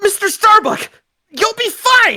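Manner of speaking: encouraging shouting. Cheering up a downcast friend in a game scene: yelling encouragement. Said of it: "What's with the yelling?".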